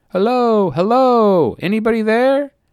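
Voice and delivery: very high, very loud, drawn-out shout. Narrator reads a young man approaching on foot, heard before seen; shouting. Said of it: "young Reggie's voice shouting".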